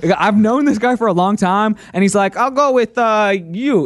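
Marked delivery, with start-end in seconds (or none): 2.3-3.9 very slow, put-on Brazilian accent. Telling about a Brazilian ex-Special Forces friend who picked the speaker: imitating a Brazilian accent. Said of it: "you're doing an accent".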